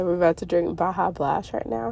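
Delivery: ordinary talk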